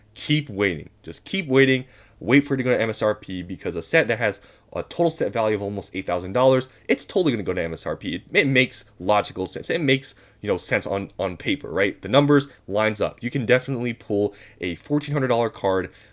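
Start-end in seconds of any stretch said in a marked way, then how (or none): none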